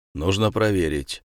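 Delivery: plain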